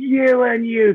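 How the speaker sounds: tiny, very high, squeaky called-out shout. Retelling a shout heard during a race semi-final, in Jamie's little squeaky voice. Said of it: "Jamie's little squeaky voice".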